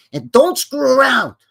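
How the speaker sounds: tough-guy voice, pushed high and loud. Acting out someone asking for a nice table, in a Joe Pesci voice. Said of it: "you better do that Joe Pesci voice".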